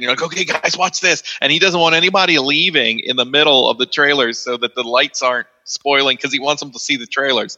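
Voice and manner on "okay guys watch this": mock eager kid voice, excited and pitched up. Acting out showing friends a movie trailer: imitating excited speech. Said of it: "and you're all excited".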